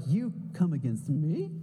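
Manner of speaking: surprised, taken-aback tone in low voice. The speaker shows how readers would say the words, as a surprised question. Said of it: "we're surprised when Goliath comes against us".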